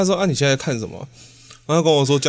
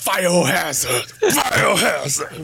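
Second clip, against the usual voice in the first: put-on shouting, called out over and over; 4 semitones higher than usual. Retelling repeatedly shouting a game title: imitating own past shouting. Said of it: "我还一直大喊".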